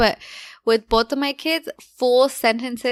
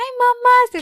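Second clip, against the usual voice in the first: put-on loud, very high-pitched baby talk; 12 semitones higher, 5 dB louder than usual. Retelling how the brother-in-law greets the baby: imitating baby talk. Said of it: "just start baby talking her".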